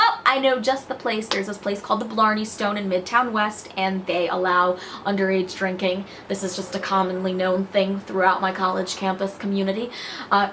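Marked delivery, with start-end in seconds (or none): none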